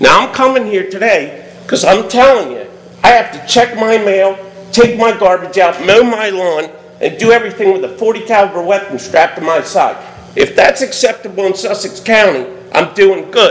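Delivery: ordinary delivery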